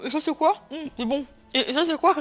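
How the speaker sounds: talking with mouth full. Describing how they taste everything, the speaker acts out asking questions: mock talking with mouth full. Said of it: "la bouche pleine, très élégamment".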